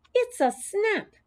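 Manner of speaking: very high, squeaky hamster voice. When a woman asks to be shown his care, the hamster replies, Humphrey's squeak. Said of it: "I squeaked".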